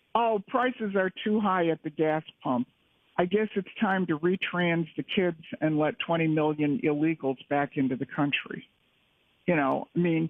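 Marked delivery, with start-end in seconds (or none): none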